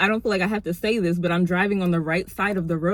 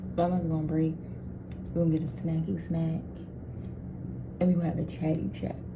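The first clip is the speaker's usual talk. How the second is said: quiet, hushed whisper; 3 semitones lower, 8 dB quieter than usual. About to go on break, not wanting anyone to hear, whispering. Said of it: "I'm whispering because I don't want anyone to hear me".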